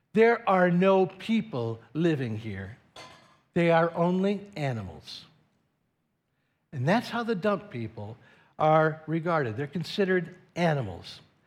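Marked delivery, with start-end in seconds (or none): 0.1-5.2 mock disgusted, contemptuous, sneering snarl. Speaker retelling what a man said before letting them in, acting out a disgusted snarl. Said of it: "with a snarl of disgust".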